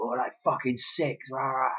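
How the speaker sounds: put-on, high-pitched, really angry grumbling voice. Retelling his reply with miles still to go, imitating someone really angry. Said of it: "really, really angry".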